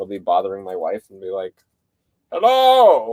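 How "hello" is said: shrill, very loud, high-pitched cartoon voice. Retelling how he bothers his wife with the same voice: Clayface voice. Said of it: "I feel like I do that voice a little too often".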